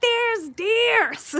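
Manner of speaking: put-on, very high, loud called-out voice. Retelling finally calling a husband about deer: imitating own loud call. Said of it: "I finally say it loud".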